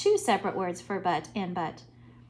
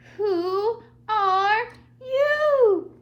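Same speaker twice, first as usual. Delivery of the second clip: very high, quavering, trembling voice; 12 semitones higher, 7 dB louder than usual. The narrator questions a ghost floating over the bed at night: trembling voice. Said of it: "I asked in a trembling voice".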